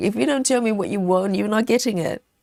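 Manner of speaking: play-acted fed-up, exasperated, frustrated husband tone. Imitating a husband who doesn't know what gift to get: imitating a frustrated husband. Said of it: "and he's frustrated".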